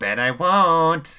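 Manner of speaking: mocking taunt, very high, very loud and drawn out. Chaos answers the leader's threat, taunting. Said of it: "Chaos taunted as a wicked smile spread".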